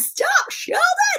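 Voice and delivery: shrieking scream, way up high.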